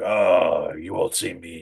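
very slow, throaty put-on voice pushed from throat. The speaker shows how she tried a voice from a movie, throaty. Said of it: "It's like a fucking like throat thing".

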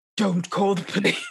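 put-on whispering hero voice. Telling how someone covers your mouth and eyes from behind, Batman whisper. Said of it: "they whisper in your ear".

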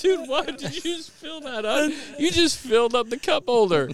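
mock teasing, laughing through it, very high. Retelling laughing at another passenger in the car, acting out mocking laughter. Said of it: "laughing, like almost making fun of him".

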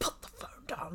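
put-on, hushed, furious, whispered voice. Retelling what a policeman shouted from his car: imitating an angry policeman. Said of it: "really angrily as well".

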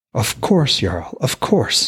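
glowing, delighted tone. Narrator reads a character answering a jarl who told him to lower his voice, delighted. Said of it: "delight shining in his voice".

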